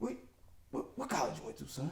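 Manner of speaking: hushed, soft, breathy delivery. Retelling a first phone call with Uncle Ray: imitating Ray Lewis's way of talking. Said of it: "that's really how he talks".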